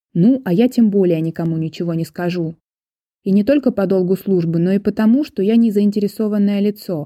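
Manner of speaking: ordinary delivery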